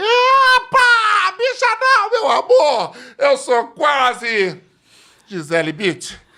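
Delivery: swooping stage yell, very loud, high and drawn out. Retelling an entrance on stage in a tribute show: imitating own past shout. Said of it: "eu entrei e gritei".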